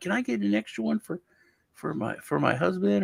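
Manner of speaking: very high, bubbling over with excitement. Retelling a lady's request for extra candy: imitating a super excited lady. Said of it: "she was all, like, super excited".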